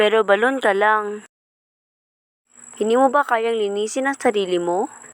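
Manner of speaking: put-on high-pitched, haughty, vain, self-admiring young maiden voice. Voicing the maiden with a high opinion of herself: haughty young maiden. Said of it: "Ang dalagang Mataas ang tingin sa sarili".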